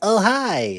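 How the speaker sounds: put-on fussy robot voice. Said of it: "do your best C three P Joe impersonation".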